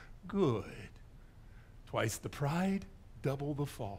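soft, understated, quiet and hushed delivery. Retelling Count Dooku answering Anakin's boast: quiet Count Dooku voice. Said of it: "very quietly says this".

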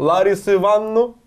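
put-on fake Caucasus accent. Speaker announces an attempt at a Caucasian accent, then speaks: put-on Caucasian accent. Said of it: "сейчас попробую сымитировать кавказский акцент".

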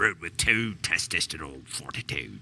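low pirate accent, put on for fun. Doing a radio ad tag line for Heavy Seas in a pirate accent. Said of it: "I have to do it with the pirate accent".

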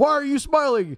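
very high, barking drill sergeant yell. Retelling a movie scene where a drill sergeant yells at a private: imitating a drill sergeant yelling. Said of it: "his drill sergeant is yelling at him".

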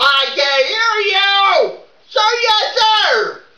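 high, drawn-out shouting yell. Rehearsing drill responses while another person asks him not to, yelling. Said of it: "You don't have to yell it".

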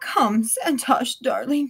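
put-on wheezy voice. Clinging to her rescuer's arm, a grandmother calls the narrator over, wheezing. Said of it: "she wheezes".

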